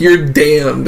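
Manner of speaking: normal talking voice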